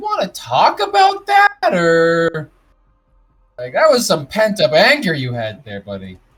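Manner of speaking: joking sarcasm, high, swooping, drawn out. Natari shrugs at Vic after he wrecks the instruments, sarcastic and unserious Natari. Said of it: "and sarcastically, in a very not serious way".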